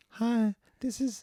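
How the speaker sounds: very high fake woman's falsetto voice from a man. Imitating a character pretending to be a girl on the radio: imitating a man faking a woman's voice. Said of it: "he sounds like this".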